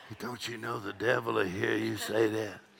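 soft, hushed half-whisper under the breath. Retelling what a visiting pastor said to Dad Hagin: imitating a half-whisper. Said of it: "He whispered".

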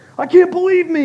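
very loud, very high, shrill scolding shout. Imitating a gym guy who just missed a shot: imitating a guy yelling at himself. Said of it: "yelling at himself".

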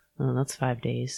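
muttered under the breath. A wife retells a remark her husband made, muttered under his breath. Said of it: "says under his breath".

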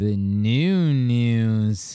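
heavily nasal tone, "new" stretched out. Host welcoming listeners to the wednesday news show, nasal voice. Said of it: "so nasally".

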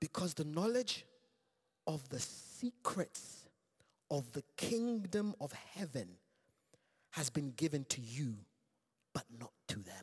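hushed, secretive half-whisper. Reading a scripture reply aloud to listeners, half-whispering for a reason. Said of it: "I'm whispering for a reason".

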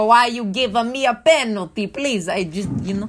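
high, loud, pleading put-on Italian accent. Imitating Lewis Hamilton complaining to the stewards: Italian accent. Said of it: "that's Italian, not British".

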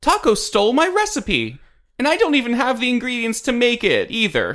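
high-pitched sobbing cry through tears. In a tabletop game, Paloma cries out to the players, crying as Paloma. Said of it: "You see Paloma. She is crying".

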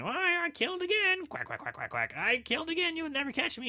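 very high, swooping, duck-like, quacking, taunting voice. Retelling a film's killer taunting a lieutenant by phone: imitating a quacking caller. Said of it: "it's quacking".

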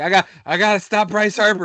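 put-on very high, loud, drunken ranting outburst. Retelling a joke scene where Papelbon comes back drunk: imitating drunk Papelbon. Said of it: "he's drunk".

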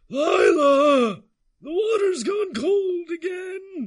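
put-on very high, very loud, very slow old man yell. Storyteller voices a hobbled old man coming down and calling to someone, hobbled old man yelling. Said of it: "this hobbled old man bent over himself, / this hobbled old man bent over himself, carrying a walking stick, sword on his hip, but it doesn't seem like he could lift it out of its sheath. / this hobble".

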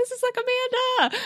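high excited fan voice.

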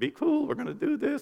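mock muttering under breath. Speaker retelling what they say to a bride and groom, retelling talking under breath. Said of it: "I'm talking to them under my breath".

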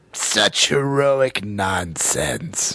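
put-on villain voice. Wrapping a Transformers movie anniversary podcast, a host quotes the film in Megatron voice. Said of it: "you sound more like Megatron than you think".

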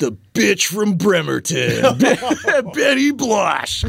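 big showman announcer voice. Imagining an announcer introducing Sarah's character Betty Blush: announcer voice. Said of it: "like the announcer voice saying".

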